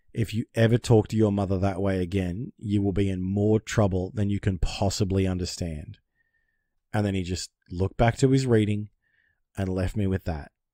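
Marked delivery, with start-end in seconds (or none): none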